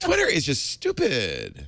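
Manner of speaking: put-on valley girl voice. Mocking a typical article about Twitter: imitating a Valley Girl accent. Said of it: "I like your Valley Girl, uh, accent".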